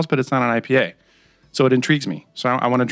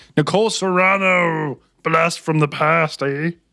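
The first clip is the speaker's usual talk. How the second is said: very slow, high, drawn-out eighties cartoon villain voice; 5 semitones higher than usual. Tasting a drink and chatting with others, in an eighties cartoon villain voice. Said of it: "why did we have to go to that voice?".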